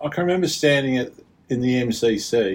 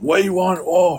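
yelling, higher pitch; 6 semitones higher, 4 dB louder than usual. Retelling fans at a test match yelling for a player: imitating fans yelling. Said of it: "these guys were just yelling".

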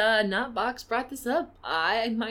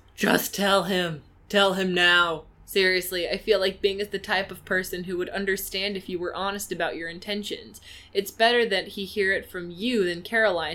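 usual speaking voice

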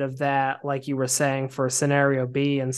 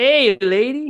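bad put-on Mexican accent, very high and loud; 10 semitones higher, 6 dB louder than usual. Speaker discussing a game's bumbling sidekick Carlos, in bad Mexican-accent Carlos voice. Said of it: "the bad kind of like Mexican voice acting".

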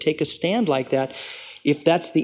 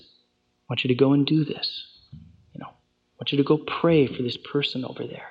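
mock-gentle imitated voice, quieter. Preaching to a congregation, acting out how god speaks to a person, imitating a gentle voice. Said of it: "The voice of Satan is a pushy voice".

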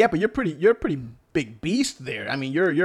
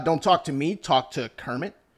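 ordinary delivery

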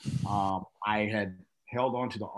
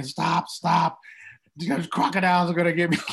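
loud, high, frantic panicked screaming; 8 semitones higher, 7 dB louder than usual. Retelling how the others started to take off without them, re-enacting own screaming. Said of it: "I'm screaming".

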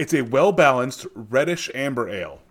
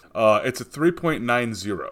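normal talking voice

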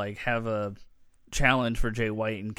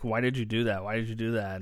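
ordinary delivery

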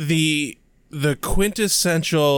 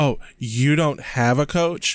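imitated condescending tone. Retelling how a woman sounded talking about another girl, mock-condescending tone. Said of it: "she has this tone of".

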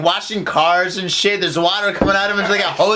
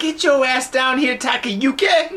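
put-on voice, pitched much higher; 5 semitones higher than usual. Acting out a girlfriend calling her boyfriend to a car park, in a girlfriend's voice. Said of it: "You got the right voice going".

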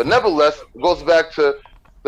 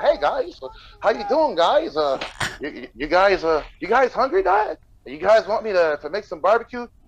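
stumbling, super-friendly dad voice, pitched up; 5 semitones higher than usual. Retelling how a friend's dad offered food to the kids: imitating an overly nice dad. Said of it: "the dad's the nicest dude ever".

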